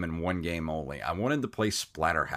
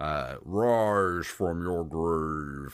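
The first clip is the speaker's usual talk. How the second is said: very slow, cheap, badly digitized voiceover. Recommending an old arcade game, quoting its voiceover in a bad digitized game voice. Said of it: "like the really bad digitized voice".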